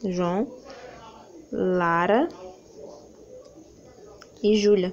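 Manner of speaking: slow listing, short pause after each name. Showing what a comma does in a list: short pauses between the names. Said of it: "Foi paradas, foi uma parada que eu fiz na hora que eu falei".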